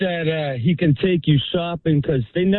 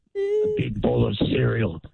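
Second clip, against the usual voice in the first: put-on creepy superhero voice, lower and quieter; 5 semitones lower, 4 dB quieter than usual. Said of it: "See, it sounds creepy".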